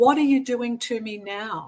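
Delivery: put-on sobbing voice. Retelling a spiritual experience, own words then: retelling own sobbing words. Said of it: "I remember sobbing and saying".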